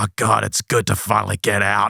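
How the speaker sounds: harsh, grating, loud, totally different voice. Retelling a woman's sudden transformation into a totally different voice, harsh, grating, loud. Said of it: "this this voice is like".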